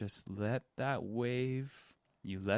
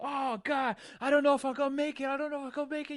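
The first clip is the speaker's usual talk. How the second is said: acted breathless panic, very high-pitched and rushed; 4 dB louder than usual. Acting out a swimmer with burning lungs underwater: acting out panic, lungs burning. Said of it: "Panic, your lungs burning".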